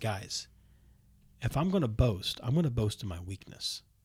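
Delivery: slow, low-pitched, clearly enunciated voice. Imagining Paul dictating this passage aloud: Paul, slow, low and clear. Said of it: "Paul slows down ... speaks clearly, lowers his voice".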